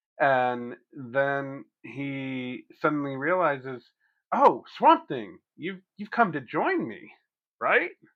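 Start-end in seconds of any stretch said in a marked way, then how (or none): 4.3-7.9 animated sing-song voice, high with wide pitch swings. Recapping a comic issue, the speaker voices Woodrue speaking to Swamp Thing. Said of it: "picture you doing that voice as Woodrow".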